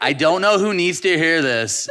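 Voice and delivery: belted high and loud like a catchy song hook.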